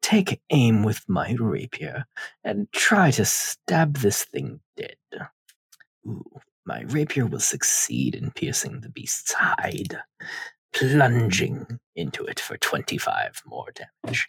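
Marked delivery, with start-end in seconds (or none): 6.1-14.3 hushed, breathy villain voice, breathed out. Taking aim with a rapier to stab a beast in a game, talking in a Palpatine voice. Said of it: "Why are you talking like Palpatine?".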